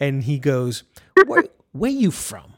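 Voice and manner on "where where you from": put-on suspicious tone, higher. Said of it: "talking to me with that tone, like, suspicious".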